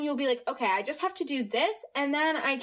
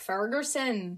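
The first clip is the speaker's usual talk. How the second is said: failed attempt at a Scottish accent; 4 semitones lower than usual. Apologizing, showing a failed try at saying ferguson: attempted scottish accent. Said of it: "kind of in a Scottish accent".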